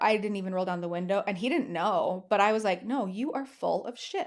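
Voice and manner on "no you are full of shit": put-on anger, slow and deliberate. Retelling refusing to let him into the car: imitating an angry retort. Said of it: "I was so mad at him".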